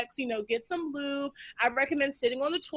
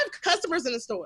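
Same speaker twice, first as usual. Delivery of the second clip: ordinary talk, nothing marked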